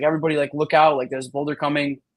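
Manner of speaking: ordinary delivery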